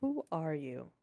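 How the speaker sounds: whispering, acted. Voicing a character who speaks without full volume: whispering in character. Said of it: "John will whisper this".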